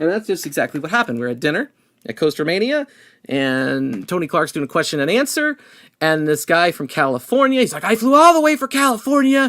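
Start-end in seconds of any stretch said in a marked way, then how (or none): 7.9-9.5 mock screaming, higher. Retelling a guest blowing up at a dinner Q&A: imitating someone screaming. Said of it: "he starts screaming".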